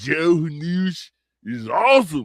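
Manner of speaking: put-on Florida voice, news drawn out. Speaker repeats a remark, this time in a Florida man voice. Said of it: "I didn't do it in my Florida man voice".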